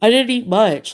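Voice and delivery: guarded, defensive, prickly, justifying tone. Retelling a conversation, the speaker quotes his reply: imitating a defensive reply. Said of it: "he got really defensive".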